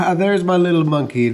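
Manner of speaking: delighted loud laugh. Narrator reads a father speaking to his small daughter, laughing. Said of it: "laughed Lucan".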